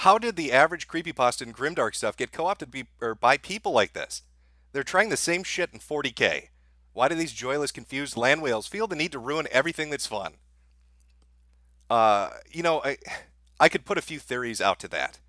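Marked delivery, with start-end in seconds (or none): none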